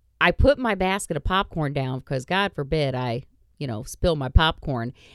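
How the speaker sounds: ordinary talk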